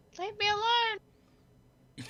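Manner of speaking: very high, freaked-out, panicked shriek. Pretending to be Stella to fool someone downstairs: screaming as Stella. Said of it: "can I pretend I'm Stella and go".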